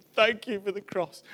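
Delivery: put-on German accent. Speaker recounting a man's words after being given a wooden cross, german accent. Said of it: "in the German accent going".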